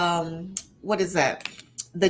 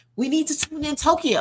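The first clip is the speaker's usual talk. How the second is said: pressing, urgent, insistent voice pitched up; 8 semitones higher than usual. Recalling schoolyard teasing, the speaker quotes the other kids: mock-urgent tone. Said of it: "they would say it with such such urgency".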